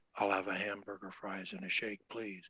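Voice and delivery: gentle, soft. A speaker shows an audience the different voice registers they use, saying an order in a soft voice.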